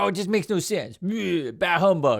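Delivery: sour, dismissive, grumpy grumbling groan. Mocking the grumpy figure who rejects the party: imitating a grumpy party pooper. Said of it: "this guy who's like the party pooper".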